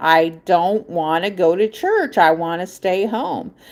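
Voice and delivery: slow, tearful crying, pleading. Retelling refusing to go to church: imitating own past crying. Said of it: "I started crying and saying".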